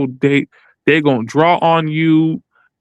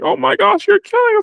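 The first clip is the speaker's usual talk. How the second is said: mock shrill, very high-pitched scream. Retelling what a lady in the video screamed: imitating a woman screaming.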